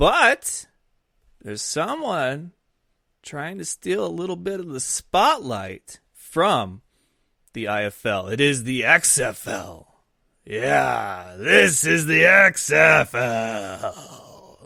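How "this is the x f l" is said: booming, loud, very slow and drawn out. Announcing the league to listeners: Vince McMahon voice. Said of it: "my best Vince McMahon impersonation".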